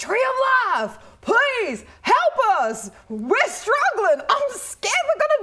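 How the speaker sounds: very high, swooping, loud calling-out yell. A player's character, lute out for drama, calls to a tree, yelling out. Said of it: "And I yell out and I go".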